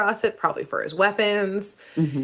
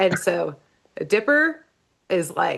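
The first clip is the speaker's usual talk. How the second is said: usual speaking voice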